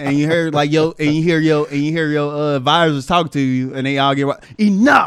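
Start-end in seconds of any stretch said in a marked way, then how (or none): 4.6-5.1 loud, dramatic, commanding king-like voice. Retelling Trump silencing a reporter like a king on his throne: imitating Trump's movie-king "Enough". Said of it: "He said it like it was a movie".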